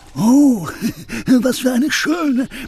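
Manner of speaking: delighted, very high pitch, slow and drawn-out. The wolf finds a bottle lying on the forest floor, delighted. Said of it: "Er freute sich".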